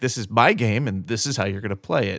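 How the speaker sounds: ordinary talk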